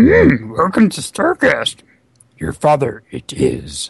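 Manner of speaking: animated voice with pitch swinging up and down. Answering a listener's request on the podcast: Yoda impression. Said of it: "can you do Yoda for me".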